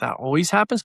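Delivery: curious, inquisitive delivery. Showing how the reply should be said, in an inquisitive questioning tone. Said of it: "you literally got to say it inquisitively".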